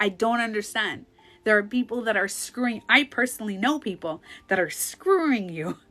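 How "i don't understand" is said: play-acted tearful words broken by crying. Retelling pleading in an office with a six-month-old: retelling own crying. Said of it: "I was crying. I'm like".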